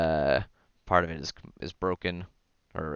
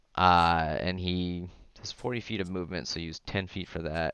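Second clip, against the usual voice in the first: plain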